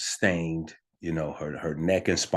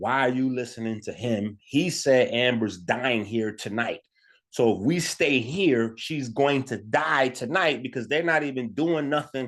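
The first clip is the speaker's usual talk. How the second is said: mock, high, all-out screaming; 7 semitones higher than usual. Retelling an argument at the hospital: imitating own past screaming. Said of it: "now I'm screaming at her".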